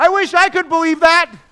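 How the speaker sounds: very loud, high-pitched, full-volume yell. Recounting the storm with their parents in the car, retelling a yell. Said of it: "And I'm yelling".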